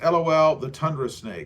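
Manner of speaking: ordinary talk, nothing marked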